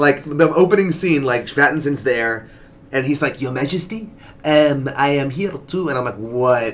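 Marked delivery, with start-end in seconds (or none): 3.4-5.9 slow, put-on French accent. Recalling a film's opening scene, doing Pattinson's French accent. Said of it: "French accent".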